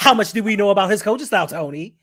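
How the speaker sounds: loud, pushy, aggressive, confrontational grilling. Acting out how a chat viewer's typed question sounds: put-on aggressive tone. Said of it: "talking to me aggressively through chat".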